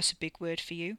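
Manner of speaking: ordinary talk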